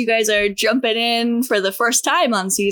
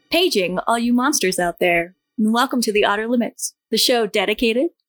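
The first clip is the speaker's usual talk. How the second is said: public radio announcer voice. A show host opens the episode welcoming listeners, in an NPR voice. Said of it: "How was that for an NPR voice?".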